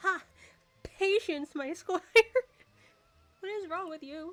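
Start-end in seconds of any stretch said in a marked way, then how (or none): 0.0-2.0 English-dubbed anime style voice. Repeating an in-character line to the other speaker, English-dub anime voice. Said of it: "You talk like a English dub anime".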